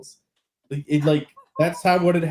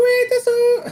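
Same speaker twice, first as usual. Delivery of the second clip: imitated anime girl voice, higher pitch; 4 dB louder than usual. Joking about an anime girl face on a phone: imitating an anime girl. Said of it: "an anime titty girl face going".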